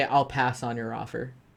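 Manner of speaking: usual speaking voice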